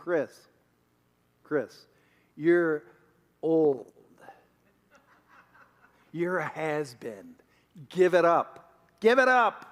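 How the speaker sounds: jeering, sneering, taunting voice, acted out. Recalling a voice he heard this summer, the speaker is imitating a mocking voice. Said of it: "mocking me".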